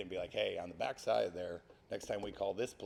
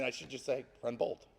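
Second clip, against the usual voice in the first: plain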